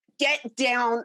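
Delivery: acted angry, getting mad voice. Retelling ordering a frozen woman off a chair, retelling an angry order. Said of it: "because I'm getting mad".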